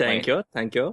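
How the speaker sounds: put-on sudden, slight hint of a German accent. Thanking the others after being praised for a pun: german accent. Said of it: "German accent all of a sudden?".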